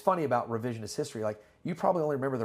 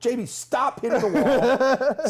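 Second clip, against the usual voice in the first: yelling, higher and louder; 12 semitones higher, 10 dB louder than usual. Retelling yelling at a friend for rolling into the wall: imitating someone yelling. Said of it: "I remember yelling at you".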